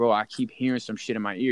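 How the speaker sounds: ordinary talk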